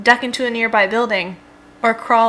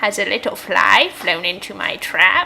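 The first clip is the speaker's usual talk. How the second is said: put-on slow, drawn-out old voice. Narrating an interactive game story, voicing an unseen speaker: old voice. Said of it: "says an old voice".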